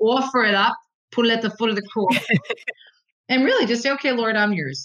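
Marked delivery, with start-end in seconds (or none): 0.0-2.2 put-on New Jersey accent. A speaker quotes their mother's advice to listeners; mother's Jersey accent. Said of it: "as my mother used to say in her Jersey accent".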